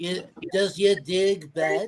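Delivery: put-on bumbling French accent, dog pronounced as dig. Restarting a favorite-line game after a flub, doing an Inspector Clouseau impression. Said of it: "Inspector Clouseau, Clouseau says".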